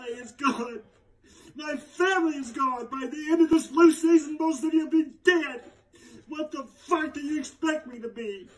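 high-pitched speech while crying, through tears. Answering someone who says their family is right there, crying while talking. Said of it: "you are literally crying over nothing".

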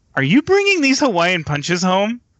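put-on deadly earnest tone, pitched high. Retelling a wife's question about bringing punches home: imitating a dead serious question. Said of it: "she was really serious, had this dead stare".

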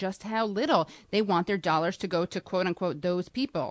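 ordinary talk, nothing marked

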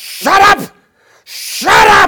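very loud, frantic, freaking-out screaming. Preacher retelling how a man charged down the hill at him, retelling a scream. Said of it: "he's screaming".

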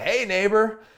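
strained, forced, fake-friendly tone, very high. Acting out a rival greeting his neighbor: imitating a forced friendly greeting. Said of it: "he forces out a fake smile".

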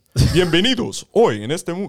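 high-pitched, booming Spanish announcer or DJ voice. Describing Spanish-language radio hosts, the speaker does a Spanish Dracula radio voice. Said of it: "a lot of them sound like Dracula".

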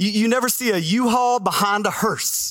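put-on Texan accent. Quoting a well-known saying to listeners: Texas accent. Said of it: "say that with a Texas accent".

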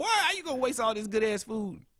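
very high, rapid scolding voice. Teasing the other speaker for throwing food away, imitating his mom scolding. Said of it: "The voice of your mom should have came out".

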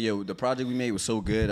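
plain

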